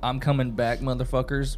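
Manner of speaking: ordinary talk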